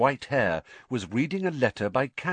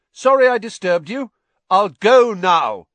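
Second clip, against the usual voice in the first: raised half shout, very loud and very high; 9 semitones higher, 12 dB louder than usual. Harry, thinking the silent wizard might be deaf, speaks up, half-shouted. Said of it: "he half shouted".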